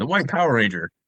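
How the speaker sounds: rushed, run-together, rattled off all in one breath. Joking about a phrase, the speaker shows how to say it, all at once. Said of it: "If you say it all at once".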